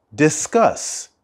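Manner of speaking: discuss with second syllable -cuss stressed. English lesson on the verb discuss: stress on second syllable of discuss. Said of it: "The stress of the word discuss is at the end".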